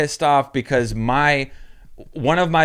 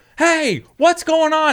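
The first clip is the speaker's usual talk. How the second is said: put-on high-pitched indignant yelling, pitch way up; 14 semitones higher, 3 dB louder than usual. Retelling how they yelled at the judges across the field; retelling own yell. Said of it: "So I'm like yelling".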